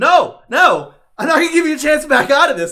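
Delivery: mock aggressive heated yell, very high, shrill and loud. Retelling an argument during an interview, imitating Alex Jones getting aggressive. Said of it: "getting like really aggressive with it".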